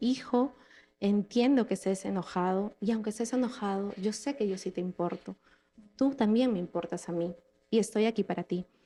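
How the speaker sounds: plain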